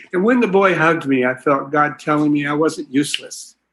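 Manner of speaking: ordinary talk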